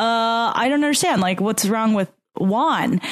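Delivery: normal talking voice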